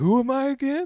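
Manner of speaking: high, wondering tone with pitch rising way up. Imagining Biden confused in the game: Biden impression. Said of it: "he would be like".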